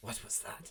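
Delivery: sibilant, breathy, hissing whisper. Voicing a mage during a summoning: hissing voice. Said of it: "you would hear her voice kind of hiss".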